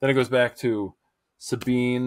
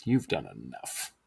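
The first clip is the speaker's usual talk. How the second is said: heavily snarky, cutting tone; 10 semitones lower, 6 dB quieter than usual. Retelling a scene where one character refuses help: imitating a snarky retort. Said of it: "not as snarky as I made it".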